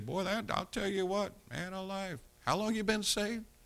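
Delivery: soft, high teasing tone.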